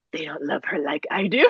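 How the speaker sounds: sinister, creepy, demon-like voice. Retelling what they said to someone while watching a show together, in a demonic voice. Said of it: "I did like this like demonic voice".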